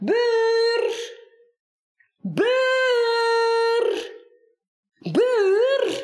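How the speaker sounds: quavering, very high, drawn-out call. Narrator reads the boss, pushing and struggling, calling for the neighbor with trembling voice. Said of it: "roept baas met trillende stem".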